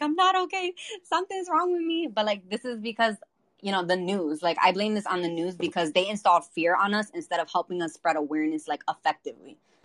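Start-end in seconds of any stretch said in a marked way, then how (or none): 0.0-2.1 frantic, panicked, very high-pitched screaming. Recounting screaming at a doctor who said everything was fine, retelling a panicked scream. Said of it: "I'm literally screaming at the doctor".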